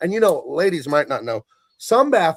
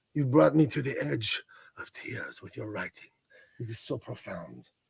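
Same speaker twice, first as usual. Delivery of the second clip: put-on French-accented voice, much quieter; 3 semitones lower, 9 dB quieter than usual. Retelling how a man read writing back to her, imitating a French accent. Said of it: "With some sort of French accent".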